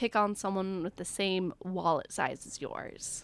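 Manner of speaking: plain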